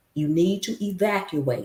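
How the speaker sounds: plain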